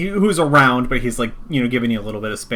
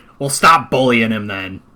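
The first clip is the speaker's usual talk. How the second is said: brisk woman's voice; 5 dB louder than usual. Retelling a woman's reply in a story, in a brisk female voice. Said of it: "brisk but you know female voice".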